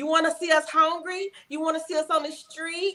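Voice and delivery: manipulative, guilt-tripping pleading tone. Acting out what a manipulative partner says to him: imitating a manipulative plea.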